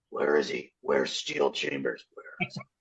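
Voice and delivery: very low, creaky character voice.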